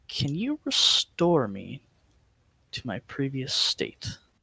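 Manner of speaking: secretive, confiding stage whisper. Player character going up to her with a request, half-whispering in her ear. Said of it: "I kind of like whisper in her ear".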